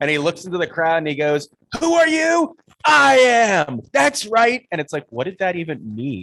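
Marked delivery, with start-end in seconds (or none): 1.8-4.6 ridiculous, high, loud screamed victory cry. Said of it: "he screams out this ridiculous".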